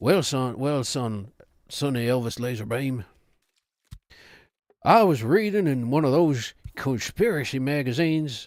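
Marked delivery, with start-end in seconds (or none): 0.0-3.0 put-on Southern accent. Voicing Daddy Laserbeam as Arthur Morgan talking to his son; Arthur Morgan voice. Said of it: "a racist Southern accent".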